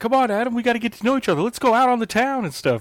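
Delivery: thrilled, super excited, very high-pitched gushing voice. Retelling what a wrestler said backstage to another wrestler: imitating super excited speech. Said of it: "super excited".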